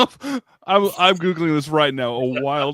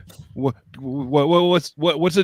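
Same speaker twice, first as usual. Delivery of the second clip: put-on panicked, freaking-out voice. Telling how his son reacted to a stuffed rat, father is imitating son freaking out. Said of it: "he starts freaking out".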